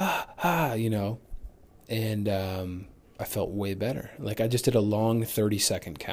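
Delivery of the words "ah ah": high, sharp, gasping hyperventilation. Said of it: "it sounds like I'm hyperventilating".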